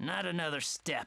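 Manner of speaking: low, spat-out delivery. Narrator reading an old man's line as he turns his back, spat out. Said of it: "The man almost spat out".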